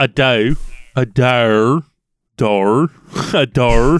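low attempted Australian accent, "doe" stretched out. Taking turns repeating a word, in an attempted Australian accent. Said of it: "I'm going to get this accent now".

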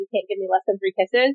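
ordinary delivery

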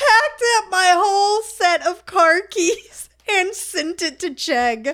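laughing through tears, high, loud and slow.

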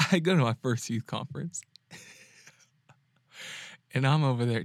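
speech mixed with laughter. Starting a story about a youth conference, laughing while talking. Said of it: "I can't tell a story without laughing".

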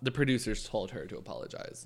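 soft, low, conspiratorial whisper.

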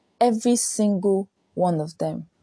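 ordinary talk, nothing marked

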